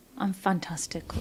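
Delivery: dead straight, soft, straight-faced delivery.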